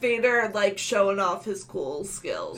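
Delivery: ordinary delivery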